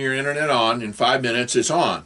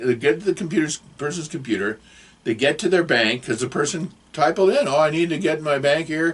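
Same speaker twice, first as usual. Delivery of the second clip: ordinary talk, nothing marked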